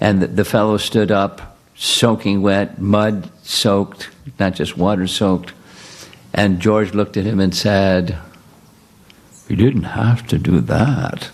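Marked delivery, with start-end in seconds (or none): 9.5-11.3 put-on nice, well-spoken British accent. Telling a story about a man falling in a puddle, quoting George in a nice British accent. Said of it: "With a nice British accent".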